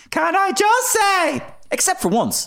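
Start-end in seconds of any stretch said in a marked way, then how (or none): 0.1-1.4 very high, drawn-out raised voice. Showing how a caricature differs from the real voice: Joan Burton impression. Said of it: "Joan Burton never sounded like this".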